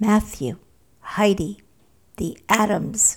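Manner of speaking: whispered slowly. Narrator reads a woman naming remembered people from Sunday school: whispered slowly. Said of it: "she whispered slowly".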